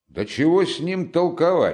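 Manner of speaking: high, rising, loud shout. A second yard-keeper cuts into the argument with a stranger, shouting. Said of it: "крикнул другой дворник".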